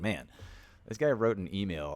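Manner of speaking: normal talking voice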